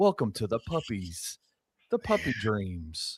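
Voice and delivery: soft, soothing, calm voice. Showing how a puppy commercial should be read: calm voice. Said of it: "You gotta go calm with it".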